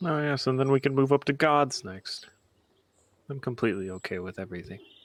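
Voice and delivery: patronizing, condescending, talking-down tone. Replying in character to a plan to fight a dragon: condescending tone.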